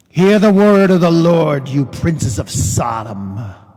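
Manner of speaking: emphatic, dramatic, forceful, theatrical inflection. Rereading the passage aloud with dramatic inflection, to make a point. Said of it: "I would like to add some dramatic inflection to make a point today".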